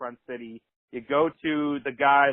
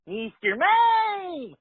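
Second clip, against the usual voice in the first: put-on creaky creature voice, much higher. Describing a creepy Pokemon saying its own name; creaky high Mr. Mime voice. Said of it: "all creaky high voice".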